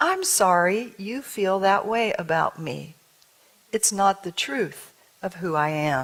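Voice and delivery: composed, calm and powerful delivery. Retelling a woman's reply on the phone; retelling a calm, powerful reply. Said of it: "Calmly, powerfully".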